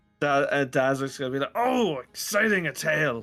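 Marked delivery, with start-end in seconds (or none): 1.6-3.2 eager, delighted, high-pitched, drawn-out excitement. Voicing a character who hears a tale is coming: excited. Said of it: "he gets right excited".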